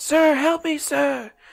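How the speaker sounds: acted, slow, very high, drawn-out yell. Retelling hearing someone in an alley: imitating someone yelling for help.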